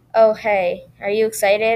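flat, dull, lifeless voice. Narrator, expecting Lily but finding Emma at the door, speaks in a dull voice. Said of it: "I asked in a dull voice".

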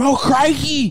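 very high, loud cry. Picturing Steve Irwin shouting behind them during a fight: Steve Irwin impression. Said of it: "him behind me as I'm trying to fight".

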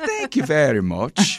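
Irish lilt, laid on for fun. Trying out different accents while others comment, Irish accent. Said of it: "That was Irish".

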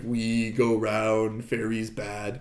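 low, flat, level, stiff mechanical robot voice. Describing a story, doing Peace's robotic voice. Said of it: "he talks like this sort of robotic".

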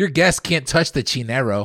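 loud, over-the-top, exaggerated East LA accent. Quoting a woman telling him off about his guest: exaggerated East LA accent. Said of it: "You made it seem like she's from East LA".

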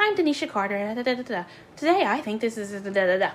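mechanical, machine-like voice. Show a listener how a girl talks to the camera, as Denisha Carter talking like a robot. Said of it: "it's her talking like a robot".

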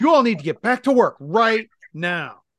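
high, loud, bossy shouting. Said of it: "And she goes".

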